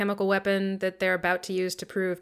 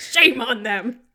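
shouting the words out; 3 semitones higher, 6 dB louder than usual. Recapping a movie scene, the speaker retells a character's line, retelling a shout. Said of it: "Just shouts".

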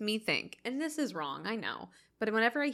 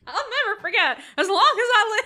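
high, loud, trembling voice; 11 semitones higher, 11 dB louder than usual. Repeating a line from the other speaker: trembling Don Knotts impression. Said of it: "You got the, like, tremble in there".

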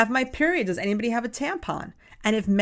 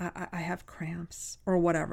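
mock low voice, quieter, much slower; 6 semitones lower, 8 dB quieter than usual. A teacher retelling what girls come up and tell her, imitating a quiet low voice. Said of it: "they're really low".

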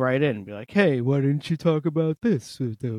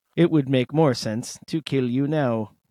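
put-on robot doctor voice. Acting out a robot doctor reading blood work: robot doctor voice. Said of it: "a robot doctor".

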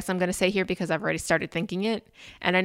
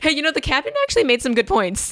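sarcastic, sing-song, fake-earnest sincerity; 8 semitones higher than usual. Joking about the movie's captain after another speaker's laugh: mock sarcastic. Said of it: "that's sarcasm in case anyone".

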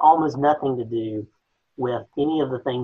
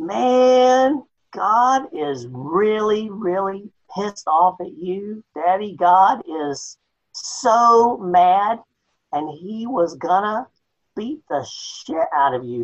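put-on crass, crude down-home Southern accent, pitched high; 8 semitones higher, 4 dB louder than usual. Doing a bit a friend always requests, speaker gives the crass southern version. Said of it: "the crass Southern version would be".

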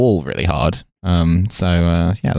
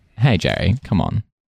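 usual speaking voice

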